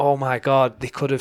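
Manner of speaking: mock scream, yelled out in alarm. Retelling watching footage on the phone, imitating own past screaming. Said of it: "And I'm just screaming, going".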